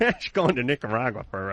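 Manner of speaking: ordinary talk, nothing marked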